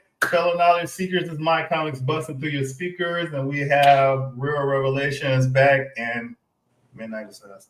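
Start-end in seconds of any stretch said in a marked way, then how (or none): 7.0-7.7 weak, timid, much softer delivery. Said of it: "you gotta say it with your chest".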